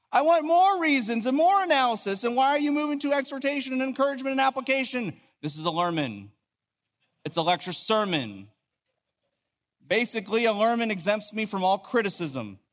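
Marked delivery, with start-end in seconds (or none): 0.1-5.2 high-pitched, eager, demanding voice. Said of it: "others of you might hear me saying".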